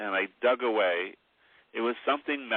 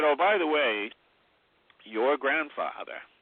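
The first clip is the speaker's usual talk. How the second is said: put-on Maine accent, higher-pitched; 5 semitones higher than usual. Retelling what a relative said about a grandfather: Maine accent. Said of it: "this is a Maine accent".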